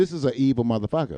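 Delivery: plain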